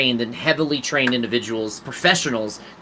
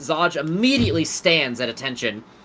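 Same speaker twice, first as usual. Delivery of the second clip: plain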